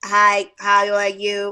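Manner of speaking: very slow, low, flat, mechanical robot voice. A speaker imagines how a girl seen online might really sound, in a robot voice. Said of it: "this girl sound like a robot".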